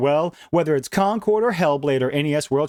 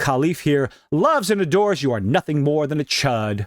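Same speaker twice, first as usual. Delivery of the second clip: ordinary talk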